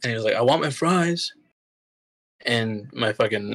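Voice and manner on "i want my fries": put-on, high-pitched, loud, demanding yell. Retelling a customer yelling into the drive-through windows: imitating a customer yelling. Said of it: "started yelling in".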